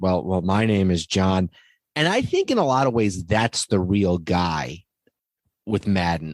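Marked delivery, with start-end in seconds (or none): 0.0-1.5 mock-dejected tone, slower. Retelling a man's remark, imitating a dejected tone. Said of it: "he very dejectedly said".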